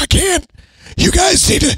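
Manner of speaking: very high, strained voice. Describing a show's main cop, the sergeant, to friends, strained sergeant voice. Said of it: "Everything he says, it seems to be strained".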